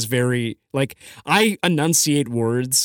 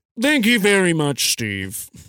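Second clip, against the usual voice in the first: self-important news anchor voice; 2 semitones higher than usual. Thanking a questioner named Steve, in a Ron Burgundy voice. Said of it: "Was that your Ron Burgundy voice?".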